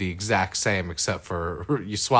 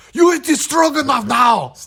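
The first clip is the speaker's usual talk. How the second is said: very loud, very high, booming put-on Austrian accent; 9 dB louder than usual. Joking that stroganoff sounds German: Arnold Schwarzenegger impression. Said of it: "'Cause you're doing an Arnold".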